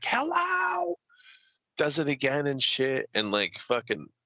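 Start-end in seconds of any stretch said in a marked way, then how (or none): 0.0-1.0 high-pitched, shrill holler. Retelling a woman pounding on the desk after waiting: retelling a yell. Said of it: "She's like yelling over the desk".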